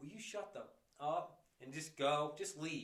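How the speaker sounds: firm, take-charge, dominant commanding voice. Retelling telling a screaming woman to leave: retelling a commanding voice. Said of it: "I must have said it with my dominant voice".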